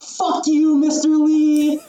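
very high shrill shout at full lung power. Recounting a guy at the back interrupting the driver's speech, retelling a top-of-lungs shout.

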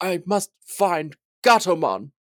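put-on unhurried, slow, dragging British accent. Describing a half-dead character floating in the water, speaking as him: Wizardmon, British accent. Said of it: "I don't know why I made him British".

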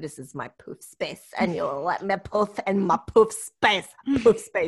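voice of a house cat. Voicing the very old pet cat with an attitude: Poofa the cat's voice. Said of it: "we do voices for animals in this house".

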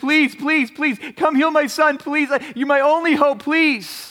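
broken, pleading voice. Acting out the father on his knees before Jesus: imitating desperate begging. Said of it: "he's just begging".

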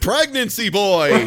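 loud, proud yell. Retelling a scene where Ravi recognizes someone: imitating a loud, proud yell. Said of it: "he yells loudly and proudly".

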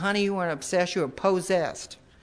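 put-on American South accent. Retelling what a fellow panelist said after the speaker shared, imitating Rosie's southern accent. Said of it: "that southern accent".

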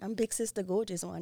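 soft, tumbling, rushed, rattled-off speech. Asked who she is, she gives her name, said really fast. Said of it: "She said that real fast".

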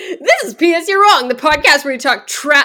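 loud, high, half-screamed delivery. Trying out a podcast intro for a co-speaker, do a Billy Eichner impression, screaming a little. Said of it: "like screaming a little bit".

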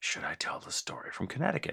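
very quiet, breathy whisper, barely above a breath. Retelling what the brother whispered across the table at a panel, whispering. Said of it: "my brother leaned across our table and whispered".

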